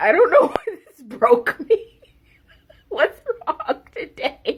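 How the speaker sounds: very high tearful crying. Back after a break and surprised to be crying; crying. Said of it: "I'm actually crying".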